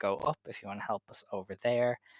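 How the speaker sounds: usual speaking voice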